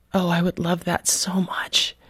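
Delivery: very soft, quiet, hushed voice. Retelling how a woman who had just yelled answered, in a very soft voice. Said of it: "she said in this very soft voice".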